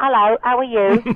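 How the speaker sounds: put-on loud high Cockney accent. Actor recalling how he talked on set before filming, in a cockney accent. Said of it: "So I talked like that".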